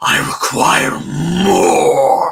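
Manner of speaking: rasping creature scream. Narrator voices the thing behind the party: terrible guttural screaming voice. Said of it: "this terrible guttural voice screaming into your head".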